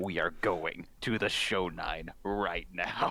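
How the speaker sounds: super deep, dropped low voice. Narrator voices Rain in the group's game: Rain's super deep voice. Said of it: "Rain's voice just gets super deep".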